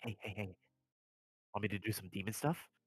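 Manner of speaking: hushed, half-whispered aside. Stepping off the ship, a character elbows his companion and half-whispers to him. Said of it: "he whispers to him in Draconic".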